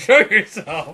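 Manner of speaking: angry yell. Retelling a scene where Hoff yells back at a voice: imitating Hoff yelling. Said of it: "Hoff yelling back at it".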